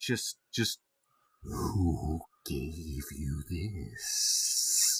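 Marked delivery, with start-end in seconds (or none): 1.4-5.0 very deep, low, slow, drawn-out snake voice. Voicing a character leaning down close to a kid: voice like a snake. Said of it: "if my voice could be a snake".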